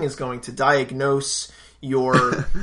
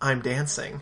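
mock whisper, quieter; 6 dB quieter than usual. Retelling a man in a video speaking to the camera: imitating a whisper. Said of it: "he whispers to the camera".

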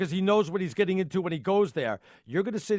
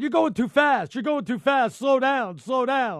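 mock, pitched-up, repeated yelling; 5 semitones higher, 4 dB louder than usual. Retelling what the guys said at a break: imitating the guys yelling. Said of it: "The guys were yelling at me".

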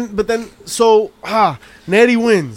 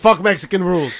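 normal talking voice

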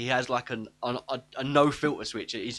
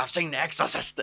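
put-on manic ranting voice. Retelling a film scene where the character goes on his rant: imitating Beetlejuice's rant. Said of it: "he goes on his rant when he goes".

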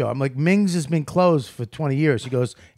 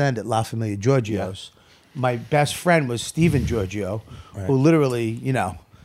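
ordinary delivery

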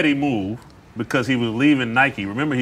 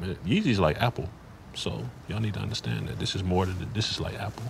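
put-on straight-faced, breathy, half-whispered earnestness; 3 semitones lower, 10 dB quieter than usual. Retelling what he now says about yeezy: imitating saying it with a straight face. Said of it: "Now he's saying with a straight face".

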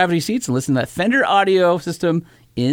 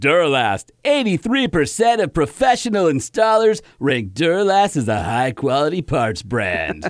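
put-on cheesy announcer voice. Adding a line to the ad read: Troy McClure voice. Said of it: "That was the dude from Simpsons".

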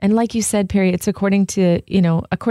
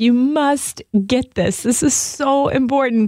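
high, earnest, heartfelt, begging pleading voice; 5 semitones higher than usual. Voicing a letter-writer urging his friend to seek God: imitating Brother Lawrence pleading. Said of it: "pleading for his friend".

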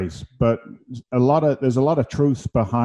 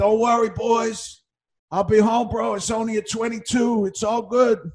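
very high, drawn-out, acted tough-guy holler; 9 semitones higher than usual. Retelling how an injured man shouted to his boys: imitating a man shouting. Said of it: "he's shouting at his boys".

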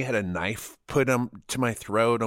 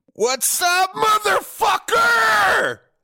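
mock drunk voice, higher and louder; 9 dB louder than usual. Acting out a phone call from his past self after drinking: imitating his drunk self. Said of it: "you've already cracked into that country club malt liquor".

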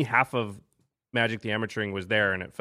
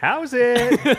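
mock shrill, very high, very loud creepy voice; 14 semitones higher, 9 dB louder than usual. Retelling how grinning people greeted the speaker at GP Vegas, mock-creepy greeting. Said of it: "That sounds kind of creepy the way you said it".

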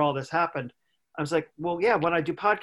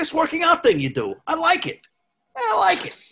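very high, swooping, put-on New York accent; 13 semitones higher, 4 dB louder than usual. Act out a retired man who moved to Florida, imitating a retired New Yorker's talk. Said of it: "He talks like this. He's from New York".

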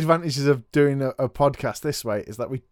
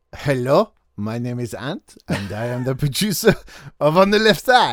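English spoken with a put-on French accent; 2 semitones lower than usual. A producer, asked to repeat the introduction, says it in a french accent. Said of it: "say that in a French accent".

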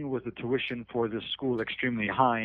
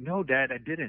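mock frightened, scared teenage voice. Retelling how he answered his dad as a teenager: retelling a scared reply. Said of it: "I said it kind of in a scared tone of voice".

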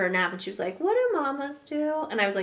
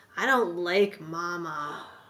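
put-on very slow teenager drawl with "mama" drawn out; 4 semitones lower than usual. A mother quotes her young daughter's reply after being told off, in a teenager voice. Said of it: "that's a teenager voice".

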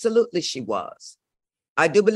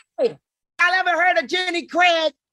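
acted-out yell, higher pitch; 9 semitones higher than usual. Retelling screaming at two baby rhinoceroses: retelling own screaming. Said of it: "and I start screaming".

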